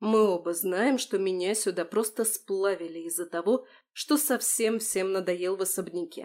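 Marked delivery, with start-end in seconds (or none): none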